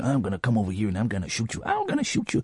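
put-on low, hushed American accent with swooping pitch. Recalling the voices they did as a child while a sister teased, Action Man voice, American accent. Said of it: "I would do an American accent".

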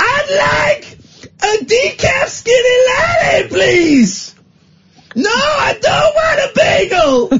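belted in a high pitch, with I'd stretched out. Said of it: "He talks like".

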